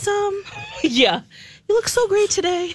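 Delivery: very high, gushing falsetto voice. Imitating Bradley complimenting before asking for coffee, in a falsetto. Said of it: "I'm in like a falsetto right now".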